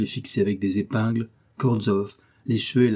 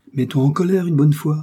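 sudden high, loud exclaiming outburst; 5 semitones higher, 5 dB louder than usual. Narrator reads a father urging his silent daughter, crying out. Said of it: "s'était-il écrié".

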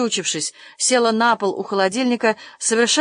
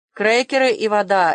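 ordinary delivery, nothing marked

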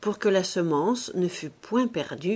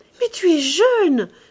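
very loud, high, shrill, full-throated passionate cry; 11 semitones higher, 10 dB louder than usual. Narrator reads the woman answering the man in her arms, crying out passionately. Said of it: "s'écria-t-elle de nouveau avec un emportement de passion".

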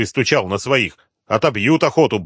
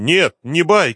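dogged, insistent, stubborn, higher pitch; 6 semitones higher than usual. The sleepwalker objects to a doubting man, stubbornly objecting. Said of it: "упрямо возразил лунатик".

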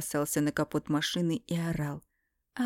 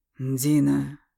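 growled, louder; 3 semitones lower, 7 dB louder than usual. A man calls out to a woman who is bleeding, growled. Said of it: "зарычал Эмиль".

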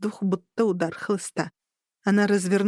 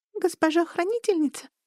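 high, thin, squeaky little voice; 9 semitones higher than usual. A lynx-eared creature addresses the guardian lady, in a squeaky thin voice. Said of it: "пропищал он тоненьким голоском".

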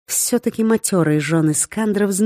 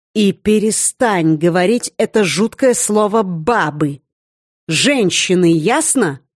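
slow, menacing, as threatening as possible. A woman scolds her seated beloved in the most menacing tone she can. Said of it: "сказала как можно более угрожающим тоном".

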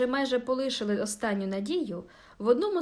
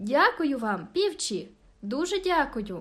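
glad, cheerful, warm and friendly calling out. A girl opens her window to thank the carol singers, cheerful, warm call. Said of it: "дівчина весело і привітно гукнула".

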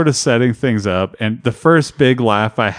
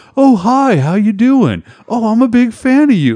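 sweet, gushing, super friendly, very high voice; 12 semitones higher, 4 dB louder than usual. Retelling a scene with an orc someone created, imitating a super nice voice. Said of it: "And he's like super nice and stuff".

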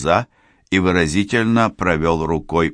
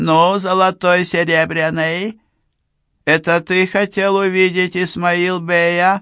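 shrill, squeaky, very high dwarf voice; 13 semitones higher than usual. A dwarf rolls up to Boris and asks him a question: disgustingly squeaky voice. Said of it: "отвратительно писклявым голоском спросил".

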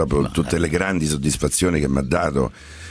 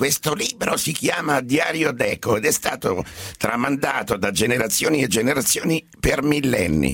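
put-on very high-pitched old man voice; 11 semitones higher than usual. Speaker recalls his first line as a japanese cartoon character, old man voice. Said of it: "A voce da vecchio".

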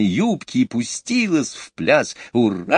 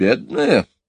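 snorting with contempt; 4 semitones lower than usual. A woman echoes another woman's word about the cook with a contemptuous snort. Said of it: "Мэри Поппинс презрительно фыркнула".

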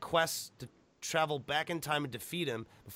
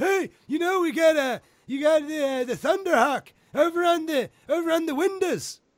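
put-on old man voice, higher, louder, slower; 14 semitones higher, 6 dB louder than usual. Talking about an old video game, in an old man voice. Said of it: "I sound like an old fuck".

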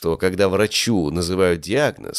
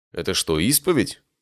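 ordinary delivery

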